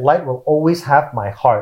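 usual speaking voice

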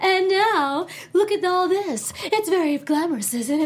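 very slow, high suave villain voice, weird intonation. Describing how an anime voice actor talked: imitating a weird suave villain voice. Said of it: "she talked like that".

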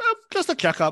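high, light woman's voice.

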